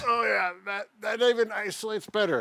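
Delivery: grunting while talking. Working through an exercise alongside a partner, grunting while talking.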